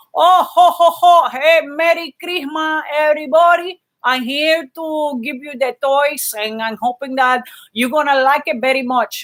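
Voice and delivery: put-on character voice in a heavy, thick Cuban accent. Speaker imitates how his dad talked when playing Santa, thick Cuban accent as Santa. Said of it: "he would talk like this".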